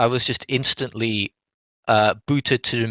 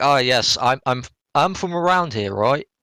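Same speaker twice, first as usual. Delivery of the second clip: heavy, put-on British London accent, slower; 2 semitones higher than usual. Mimicking an NPC whose accent breaks immersion, heavy British accent. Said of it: "He's got a really heavy British accent".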